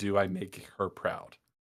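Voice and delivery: imitated sobbing, voice breaking, mock-tearful. Retelling how she delivered her line, imitating sobbing with voice breaking. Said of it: "through her sobbing and crying and voice breaking".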